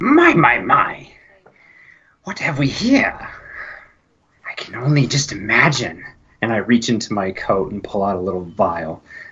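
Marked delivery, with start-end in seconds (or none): 0.0-6.0 slightly muffled, slow and deliberate voice. Voicing a masked figure speaking over a bleeding man: slightly muffled voice. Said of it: "through a slightly muffled but very audible voice".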